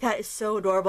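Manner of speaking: ordinary delivery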